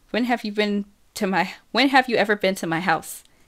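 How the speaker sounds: ordinary delivery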